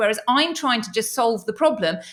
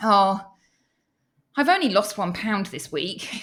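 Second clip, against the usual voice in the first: put-on voice of misery. Retelling a client's complaint about her weight loss: imitating a miserable voice. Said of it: "this sort of voice of misery".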